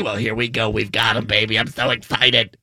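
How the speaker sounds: very low smoky rasp. Announcing the Penguins practice lines, sounding like an old woman smoking cigarettes.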